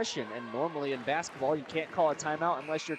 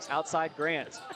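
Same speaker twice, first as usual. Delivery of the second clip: ordinary talk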